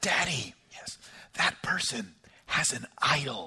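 very hushed, quiet, slow little whisper. Retelling a child's remark on a walk past a neighbor's house: imitating a quiet whisper. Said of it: "my child sort of quietly whispered to me".

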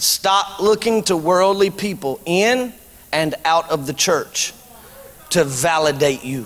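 slow, deliberate emphasis, spelled out. Repeating a point to the church audience, said slowly. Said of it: "I'm going to say this slowly so you understand".

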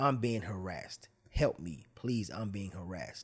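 tearful, weepy pleading with sobbing cries. Retelling a woman calling for help: imitating someone crying. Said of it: "She started crying".

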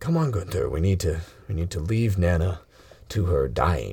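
low, fatherly dad voice. Voicing the character leading his son away: Mister Iron Will voice. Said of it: "Mister Iron, Iron Will comes over".

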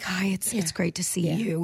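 soft, hushed, respectful whispery murmur. Retelling how everybody greeted each other at a funeral: imitating funeral whisper talk. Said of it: "the whisper talk".

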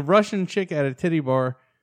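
ordinary delivery

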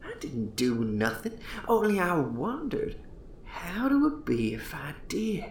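put-on hushed, husky near-whisper in extreme old Yankee dialect. An old host confides to a young man: husky near-whisper, old Yankee dialect.

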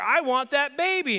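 play-acted, drawn-out, very high, loud furious voice. Speaker describes niece watching baby videos, imitating Jane getting angry. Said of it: "And she gets angry".

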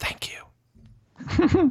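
hushed voice. Walking past each light on the path in character: whispering. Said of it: "I whisper".

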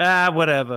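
put-on New York accent. Reading a joke script aloud, the speaker gives Grogu a New York accent. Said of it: "he has a New York accent".

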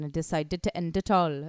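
put-on slight Indian accent. Speaker imagining how another person's sad story goes, Indian accent. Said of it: "went a bit Indian then".

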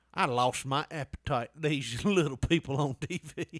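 put-on disapproving, judgy old woman voice, slow. Acting out a hypothetical remark about little people on TV: imitating a judgy old woman. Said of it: "like a judgy old woman".

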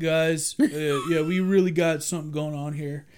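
put-on stoner computer voice. Recapping a show, the host imitates the computer Intelligence's stoner voice. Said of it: "it talks like some kind of stoner".

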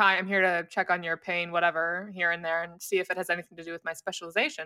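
stern, businesslike, all-business tone. Retelling how a specialist came in to check on pain: imitating a stern specialist. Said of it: "he came in here very stern".

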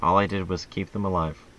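smoothest silky, gentle-toned voice. Speaking in character to the group, in the smoothest, softest voice. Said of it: "I say in like the smoothest, softest voice".

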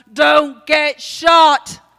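loud, slow, drawn-out shouting voice. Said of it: "he shouts".

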